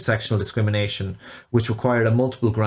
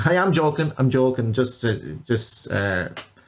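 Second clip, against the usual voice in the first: ordinary delivery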